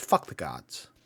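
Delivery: hushed, leaning-in, scoffing whisper. Voicing a villager who leans in close to a stranger: very quiet, leaning in. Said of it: "leans down very quietly and says".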